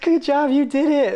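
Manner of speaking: acted-out piercing, very high-pitched, shrill scream. Retelling a scene from a movie, imitating Elf screaming. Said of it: "he comes and he screams".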